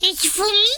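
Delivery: unpolished, poorly done, very high cartoon voice. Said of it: "I don't think I did the voice very well".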